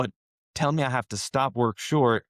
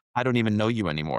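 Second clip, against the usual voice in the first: ordinary talk, nothing marked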